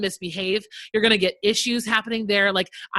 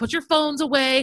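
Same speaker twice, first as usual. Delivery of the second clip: put-on yelling, higher pitched; 5 semitones higher than usual. Retelling yelling at kids: imitating own yelling. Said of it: "I'm yelling".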